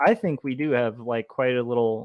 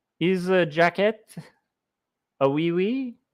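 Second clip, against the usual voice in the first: fake, clumsy, high-pitched French accent; 6 semitones higher than usual. Coloring little figures and asking about a jacket, bad french accent. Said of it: "the bad French accent".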